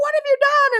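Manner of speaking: high-pitched, shrill yell. Retelling a moment after breathing pepper spray: imitating own yelling. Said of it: "what are y'all yelling about?".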